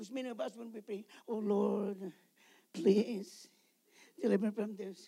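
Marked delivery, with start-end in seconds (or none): 1.3-5.1 put-on feeble voice, much quieter and slower. Urging listeners to pray with intensity, imitating a feeble prayer. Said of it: "the intensity of your desire".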